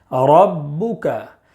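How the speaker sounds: emphatic heavy thick r sound. Explaining when ra is read heavy, demonstrating the word: heavy thick r. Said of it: "را کو پر پڑھیں گے یعنی موٹا پڑھیں گے".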